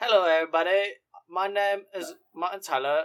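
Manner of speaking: poor British accent attempt. Two speakers role-play commentators; one starts with a bad Martin Tyler impression. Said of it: "That's not a British accent".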